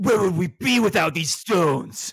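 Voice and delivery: edgy, gruff video-game character voice, pitched high. Quoting what their game character says when sharpening his weapon, gruff game-character voice. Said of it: "my guy is like gruff".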